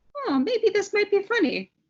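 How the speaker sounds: very high, curious, intrigued musing voice. Describing hearing a knock-knock joke, a speaker acts out getting curious. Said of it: "I start getting a little bit curious".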